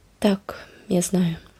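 soft-spoken. A girl answers another girl's pressing question, quiet. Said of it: "тихо відказала Енн".

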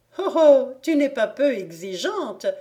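teasing speech through laughter. The young girls answer Oksana, laughing. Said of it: "dirent les jeunes filles en riant".

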